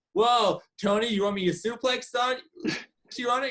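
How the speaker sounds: high, rising, incredulous announcer-style yelp. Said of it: "And Excalibur goes".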